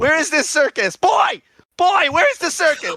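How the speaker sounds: shouting. Demanding that a boy say where the circus is, yelling. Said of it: "Stop yelling at me, please".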